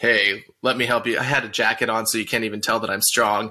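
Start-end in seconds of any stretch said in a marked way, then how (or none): 0.0-1.2 mock-condescending, mock-patronizing tone, spoken slower. Speaker retells a trainer walking up to offer help, mock-condescending. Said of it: "kind of condescending".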